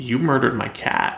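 put-on cold, menacing voice. Retelling how a character answers a killing: imitating a cold threat.

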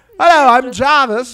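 very high, shrill, loud fake British accent. Pretending to be british psychics under fake names: put-on british accent. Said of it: "And we're British".

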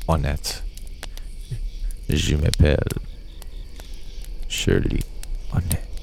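put-on posh pronunciation, whispered, hushed and breathy. Reading a true-crime story aloud, saying a name from it in a really fancy voice. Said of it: "I'm trying to say it like really fancy".

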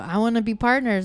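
ordinary talk, nothing marked

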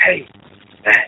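yelled stage whisper with a yell's force. Retelling a panicked voicemail left on a phone: imitating a whisper yell. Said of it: "whisper yelling into the phone".

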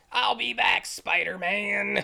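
loud, rough, very slow, drawn-out villain voice. Retelling a movie scene where Goblin flies off: Goblin impression. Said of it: "That was a really good impersonation".

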